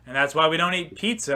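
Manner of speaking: usual speaking voice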